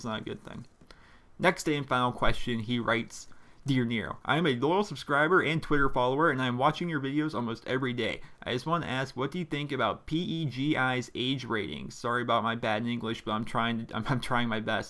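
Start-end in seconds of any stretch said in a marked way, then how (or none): none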